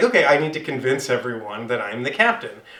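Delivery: ordinary delivery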